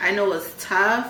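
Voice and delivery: normal talking voice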